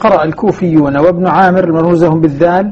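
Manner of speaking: ordinary delivery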